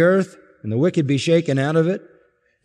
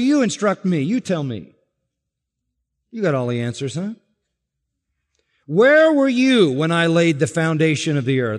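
mocking, sarcastic, swooping taunt. Reading God's challenge to Job aloud: voicing God sarcastically. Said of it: "God says sarcastically".

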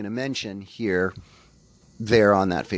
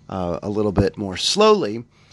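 usual speaking voice

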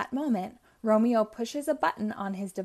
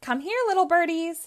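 high, loud giggly coaxing, giggling through the words; 7 semitones higher, 6 dB louder than usual. Romeo calling to the PJ Masks as they zoom towards him, giggling. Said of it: "Romeo giggles".

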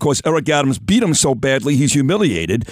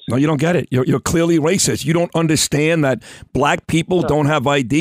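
ordinary talk, nothing marked

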